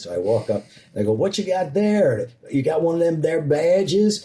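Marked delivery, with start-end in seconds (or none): 1.1-4.3 put-on small-town cop Southern drawl, pitched up. Retelling walking up to a speeding fireman's car, the speaker does a southern cop routine. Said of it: "I put on my Southern cop routine".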